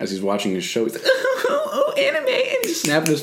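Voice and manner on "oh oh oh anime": mock very high, very slow schoolgirl giggle, excited. Describing a guy nearby watching anime, imitating his excited giggling. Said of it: "He's so excited".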